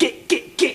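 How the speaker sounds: put-on small, angry, furious shouting voice. Teasing Lenny by voicing his imagined little inner voice, mock-furious shouting. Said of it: "I bet it's shouting".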